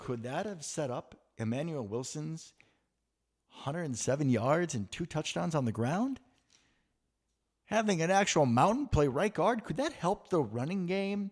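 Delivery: lightly sarcastic. Asking rhetorical questions about a big right guard and the running game: sarcastic. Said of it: "I am being a little sarcastic".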